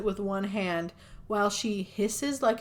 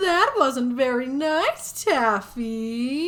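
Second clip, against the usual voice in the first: spooky put-on voice; 3 semitones higher, 6 dB louder than usual. Retelling a scene where a woman grabs another's ankle, spooky voice. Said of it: "why is that the spooky voice you're going for".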